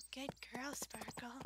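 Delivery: soft, hushed, eerie, creepy plastic-doll voice. Playing a horse-riding game, praising the horse Sparkle in a creepy Barbie voice. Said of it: "Creepy Barbie voice".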